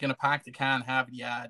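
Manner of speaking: imitated Boston accent. Talking about how they sound, the speaker slips into imitating a Boston accent. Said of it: "it's more Boston than New York".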